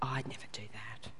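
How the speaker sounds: low, hushed, gossipy whisper.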